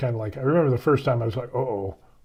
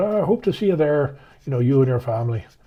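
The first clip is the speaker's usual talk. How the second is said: put-on Irish accent, Irish priest voice; 2 semitones higher, 3 dB louder than usual. Retelling what the priest told the police: Father O'Malley's Irish accent. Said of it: "he had the accent and everything".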